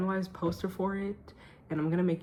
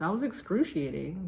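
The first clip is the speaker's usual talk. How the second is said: ordinary delivery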